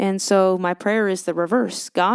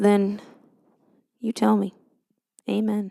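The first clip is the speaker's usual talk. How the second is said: bad, over-the-top, slow Southern American drawl. Joking prayer to the Lord, in a really poor Southern accent. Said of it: "I'm talking with a really poor southern accent".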